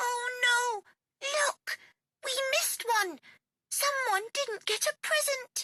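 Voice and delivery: very high gasp with a long drawn-out oh. Reading a Christmas bear story aloud, speaking as Baby Bear: gasping Baby Bear voice. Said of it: "said [name] calmly, / and she picked up the phone. / And when [name] said, / said [name] calmly".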